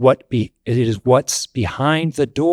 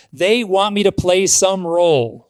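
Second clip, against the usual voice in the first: loud, high-pitched, angry screaming outburst; 7 semitones higher than usual. Recounting what he answered when asked what they want: re-enacting own scream. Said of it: "Sorry if that was too loud".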